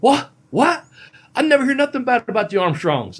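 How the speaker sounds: put-on very high, loud, botched British accent. Retelling how someone reacted to hearing a name: bad British accent. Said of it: "I can't do a British accent".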